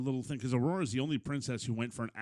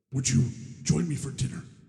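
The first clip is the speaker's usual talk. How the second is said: loud, raised, booming monster voice; 2 semitones higher, 6 dB louder than usual. Retelling a scene with the Beast, doing a little Beast impression. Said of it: "I do a little impression of the Beast".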